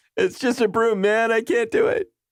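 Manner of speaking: mock whiny cop voice, pitched very high.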